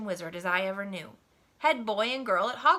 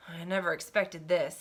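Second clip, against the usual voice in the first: low, anxious, worried voice; 4 semitones lower than usual. Narrator reading a character's reply to a boy's urgent question, in a low, worried voice. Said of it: "he said in a low, worried voice".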